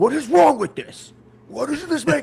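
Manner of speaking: shrill, very loud, very high frustrated yell. Speaker retells getting mad alone in her office, retelling getting mad, yelling. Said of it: "getting like mad and I'm just yelling".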